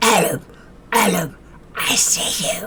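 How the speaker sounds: soft, quacky cartoon duck voice. Calling out to Adam, doing a Donald Duck voice. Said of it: "That's the best Donald Duck impersonation".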